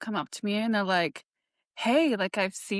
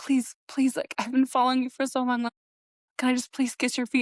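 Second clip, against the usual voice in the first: mock pleading in a man's voice; 3 semitones higher than usual. Retelling how a man waiting at the stairs begged the speaker, imitating someone begging. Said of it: "is just begging me to".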